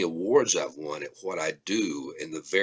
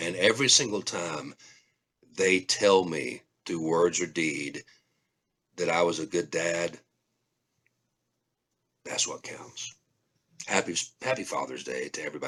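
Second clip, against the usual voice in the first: choked-up voice catching with emotion. A father speaking about his children, getting choked up. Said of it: "I'm sorry, got a little choked up there".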